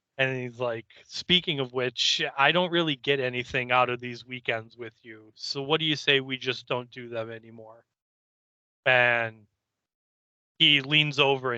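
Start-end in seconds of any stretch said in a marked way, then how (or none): none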